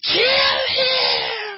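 play-acted, very high, shrill, hideous shriek. Retelling a show scene where a voice fills a character's head: imitating a hideous screaming voice. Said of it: "this hideous sounding voice just screaming".

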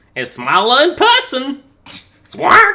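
put-on Boston-accented parrot voice. Asked to try one of their lines, the actor reads it in parrot voice with boston accent. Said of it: "doing it with the parrot accent over top of it".

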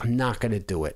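usual speaking voice

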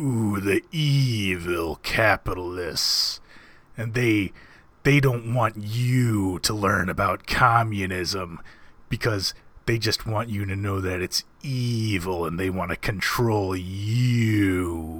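dragged-out, stretched, long drawn-out words. Speaker imitates how a man he knew talked, dragging out his words. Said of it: "drag out his words and make it sound like".

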